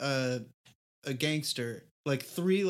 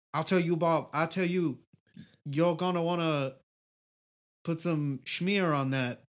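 mock Louisiana Bayou accent. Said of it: "sounds kinda like a Bayou guy who mentions the word schmear".

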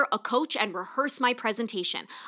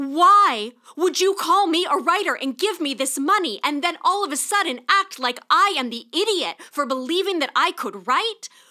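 high, loud shouted rant, "why" stretched; 6 semitones higher, 6 dB louder than usual. Venting to listeners, shouting. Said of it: "I'm sorry that I am shouting in your ears".

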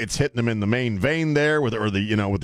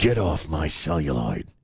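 very low, screen tough-guy voice; 8 semitones lower than usual. Speaker redoes a line, deciding it needs the Clint Eastwood voice. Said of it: "Got to use the Clint Eastwood voice".

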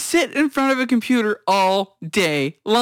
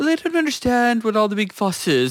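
put-on, very proper British accent. Retelling a vocal coach reaction video: imitating a proper british guy. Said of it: "real proper British guy going".

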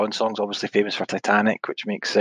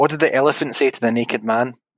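usual speaking voice

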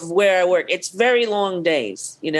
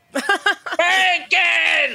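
imitated scream, pitched higher; 11 semitones higher than usual. Retelling a coworker calling for bacon every afternoon: imitating someone screaming. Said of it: "She'd scream".

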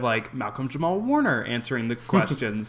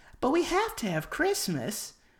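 very high put-on voice, pushed way up.

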